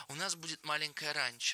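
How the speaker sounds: ordinary delivery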